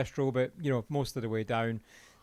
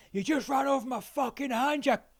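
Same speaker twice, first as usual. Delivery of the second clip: full-on, very high scream; 12 semitones higher than usual. Retelling what a dude on the water screamed: imitating someone screaming. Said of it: "I heard a dude screaming".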